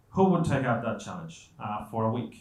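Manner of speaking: ordinary delivery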